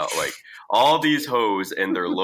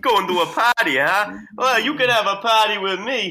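bad, creepy fake New York accent, very high pitched; 13 semitones higher, 4 dB louder than usual. Retelling what a guy said to them, in a bad creepy new york guy impression. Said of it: "That was the guy".

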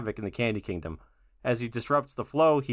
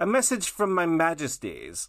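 put-on lumpy messenger voice, high, swooping, slow; 5 semitones higher than usual. Doing a character's two-second line from an episode, put-on lumpy messenger voice. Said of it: "mine's going to be a character that shows up for literally 2 seconds".

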